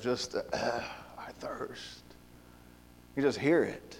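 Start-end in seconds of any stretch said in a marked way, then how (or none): 0.4-2.0 put-on gravelly voice, much quieter and lower. Quoting Jesus's words from John chapter 19, imitating Jesus's gravelly, thirsty voice. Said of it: "I can just hear the gravelly, just thirsty voice".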